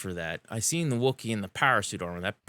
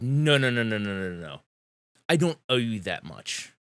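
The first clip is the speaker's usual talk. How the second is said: very angry, outraged, furious, repeated. Voicing a character who refuses a bargain, very angry. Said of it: "Vanguard gets very angry and says".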